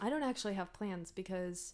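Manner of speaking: suddenly downcast, sad, quiet voice. Asked about Christmas plans, answering and suddenly sounding sad. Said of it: "do you sound sad all of a sudden?".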